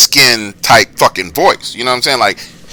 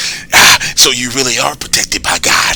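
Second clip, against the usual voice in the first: creepy creature voice, much slower. Retelling a phone call where the caller's voice suddenly changes, Smeagol voice. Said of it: "And his voice is like".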